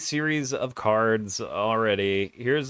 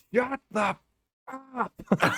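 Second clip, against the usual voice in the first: mock, shrill, very high, drawn-out, super loud shout; 11 semitones higher than usual. Retelling what someone outside just shouted: imitating someone shouting. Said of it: "Super loud".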